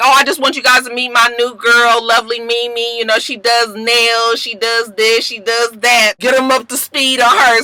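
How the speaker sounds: normal talking voice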